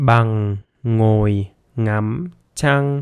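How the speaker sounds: very slow, drawn-out speech. Demonstrating a Vietnamese practice sentence step by step, said very slowly. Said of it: "very slowly".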